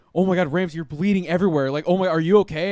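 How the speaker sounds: panicked, high, loud, shrieking voice.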